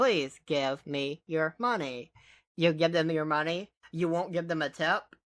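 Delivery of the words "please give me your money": mechanical talking-machine voice. Imagining a pizza delivery car talking to a customer: robot voice. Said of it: "It'll talk to them in its robot voice".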